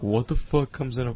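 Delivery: ordinary talk, nothing marked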